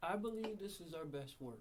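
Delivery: unconfident, unsure delivery lacking any real conviction. Answering whether this might be their best work, unconfident. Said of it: "don't sound real confident".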